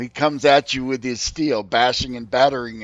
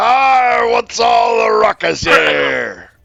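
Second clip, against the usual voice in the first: belted high, loud and slow; 10 semitones higher, 9 dB louder than usual. Voicing the arriving Captain Lasco as he asks about the ruckus: Captain Lasco voice. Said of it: "And he's like".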